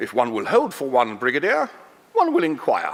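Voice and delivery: put-on posh, refined telephone voice. Acting out a phone call to Buckingham Palace: imitating the Queen's telephone voice. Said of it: "it's gonna sound something like this".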